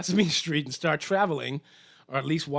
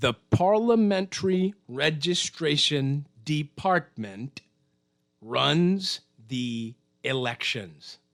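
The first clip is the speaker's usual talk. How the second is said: slow, measured, deliberate, word-by-word, runs drawn out. Explaining who runs the elections, slow deliberate delivery. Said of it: "I'll say it slowly".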